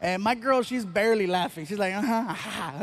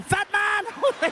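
put-on German accent, pitched higher; 10 semitones higher than usual. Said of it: "They sound like the three little pigs from the movie Shrek".

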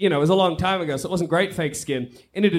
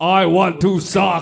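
put-on monster voice, louder; 3 dB louder than usual. Playing a zombie in a scene, speaking in a Frankenstein voice. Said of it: "I don't know why he's got a Frankenstein voice".

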